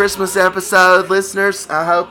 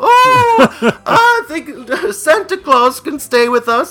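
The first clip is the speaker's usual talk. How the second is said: mock drunk woman's speech, higher; 8 semitones higher, 3 dB louder than usual. Retelling a movie scene where a wife gets on the phone: imitating a drunk woman. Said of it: "she's just wasted".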